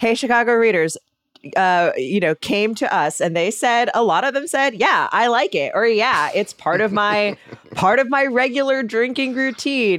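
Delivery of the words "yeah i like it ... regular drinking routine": put-on sarcastic tone. Reading out listener responses, quoting readers in a sarcastic tone. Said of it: "I'm so sorry that I sound sarca-, sarcastic".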